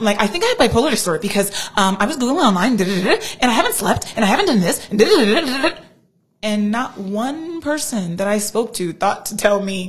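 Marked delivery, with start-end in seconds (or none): 0.2-5.8 mock frantic, breathless, fast run-on babble. Retelling calls made during an episode: imitating own frantic talking. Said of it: "Very frantic".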